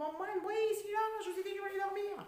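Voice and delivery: high, loud, exasperated yell from a distance.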